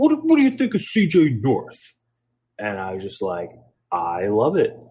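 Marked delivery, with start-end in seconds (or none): 0.0-1.9 put-on very high, swooping, butchered, thick heavy Italian accent. Quote the man suggesting a new ring name to you, in a butchered thick Italian accent. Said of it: "in his thick Italian accent that I'm going to butcher".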